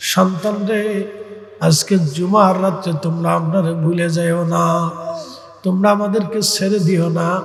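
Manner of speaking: weeping, tearful, pleading lament.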